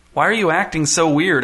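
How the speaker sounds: ordinary delivery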